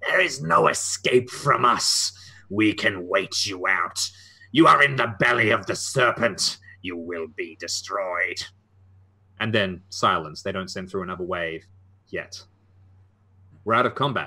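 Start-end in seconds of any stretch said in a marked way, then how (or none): 0.0-8.4 slow, drawn-out, hissing snake-creature voice. Narrator voices the returning voice calling out to the group, hissing voice. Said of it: "it hisses".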